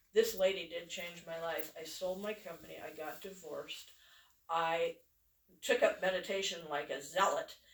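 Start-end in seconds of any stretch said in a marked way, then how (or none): none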